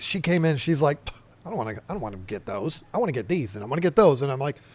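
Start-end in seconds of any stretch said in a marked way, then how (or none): 1.5-4.2 put-on nasty tone, lower and quieter. Retelling a business partner's objection to the fish order: imitating Lisa sounding nasty. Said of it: "I don't mean to say it like she said it, like she was being nasty".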